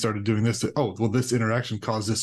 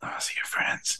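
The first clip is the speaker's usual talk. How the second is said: hushed, whispered voice. Retelling what the daughter whispered in the ear: imitating a whisper. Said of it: "She literally whispered in my ear".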